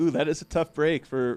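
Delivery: ordinary delivery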